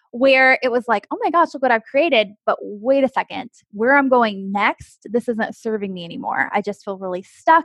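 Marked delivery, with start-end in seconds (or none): none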